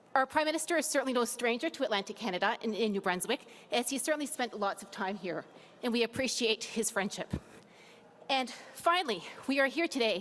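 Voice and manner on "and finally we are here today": slightly winded, catching breath. Welcoming the Prime Minister to New Brunswick after climbing steps, a bit out of breath. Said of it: "I'm a bit out of breath".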